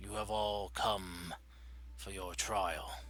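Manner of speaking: resounding voice echoing as in a large stone hall. Voicing a voice that greets the party in a temple: echoing voice. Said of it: "a familiar voice kind of echo throughout the chamber".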